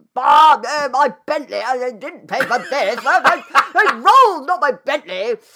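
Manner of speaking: very high, loud, drawn-out posh shout. Comparing shouting in Hackney and Mayfair, the speaker imitates Mayfair-style shouting. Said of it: "That different sort of shouting".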